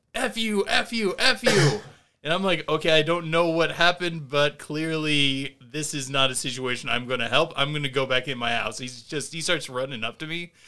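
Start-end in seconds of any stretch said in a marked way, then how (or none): 0.1-1.7 mock very slow, drawn-out, high angry yelling. Retelling a man running up and threatening the speaker, imitating a man yelling threats. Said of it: "he's waving his hands and threatening me".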